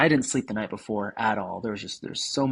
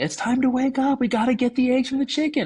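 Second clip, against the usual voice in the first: put-on very high-pitched, shrill yelling; 4 dB louder than usual. Retelling how she came in and woke the speaker, imitating someone yelling. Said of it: "she's yelling at me".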